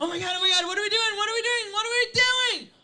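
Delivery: very loud, fast, frantic, anxious, panicked rambling. Retelling voices in the head, the anxious one: imitating an anxious person. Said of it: "the person who has high anxiety".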